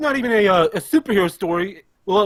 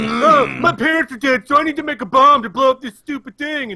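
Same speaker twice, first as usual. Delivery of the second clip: moody, self-pitying brat voice, pitched up, mopey; 5 semitones higher than usual. Mocking a moody child character who keeps complaining: mocking moody Bruce Wayne. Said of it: "He's fucking moody as shit".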